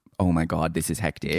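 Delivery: ordinary talk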